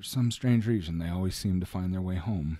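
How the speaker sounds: acted flat, expressionless tone. Retelling a father's joke to strangers: imitating a deadpan delivery. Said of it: "he would do it with a straight face".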